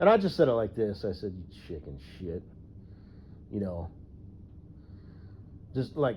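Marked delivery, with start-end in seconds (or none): 1.3-2.4 mock, flat, matter-of-fact, disgusted tone. Retelling what he once said to someone, acting out past matter-of-fact disgust. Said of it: "matter of fact, kind of like disgust".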